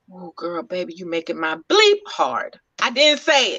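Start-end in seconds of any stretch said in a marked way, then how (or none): 0.2-2.6 close, hushed whisper. Retelling what a man said during a slow dance: imitating a whisper. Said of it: "He whispered in my ear".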